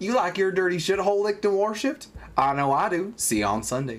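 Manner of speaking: put-on Southern accent. Asked by a co-host to do the accent in a role-played scene, Southern accent. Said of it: "did I do it like a southern accent?".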